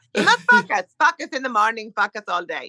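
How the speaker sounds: put-on swooping funny accent, focus with short o, like fuck us. Retelling what an astrology teacher used to say: imitating astrology teacher's funny accent. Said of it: "such a s-, funny accent".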